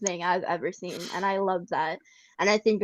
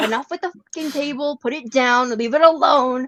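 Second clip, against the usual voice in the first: furious, loud, high angry snap; 6 semitones higher, 7 dB louder than usual. Retelling snapping at the chat over table spam: imitating an angry scream. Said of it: "And I was so angry".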